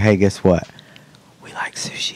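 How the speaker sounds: acted whispering. Retelling how dad whispered about eating sushi: imitating dad whispering. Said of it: "whisper it".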